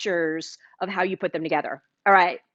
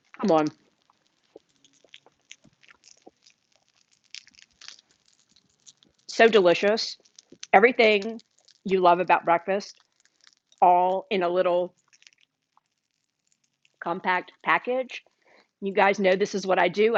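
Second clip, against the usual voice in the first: talking with mouth full, chewing. Taking a bite of the finished dish and praising it, talking with mouth full. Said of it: "I talk to you with my mouth full".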